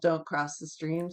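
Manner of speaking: ordinary talk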